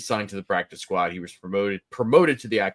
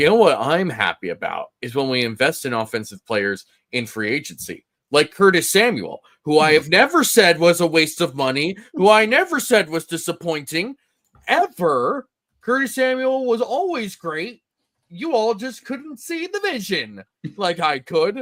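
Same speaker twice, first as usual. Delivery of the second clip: very high, swooping, fake-sincere sarcastic tone; 9 semitones higher, 5 dB louder than usual. Mocking praise of a player after quoting a fan's comment: sarcastic, fake praise. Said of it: "that is pure sarcasm".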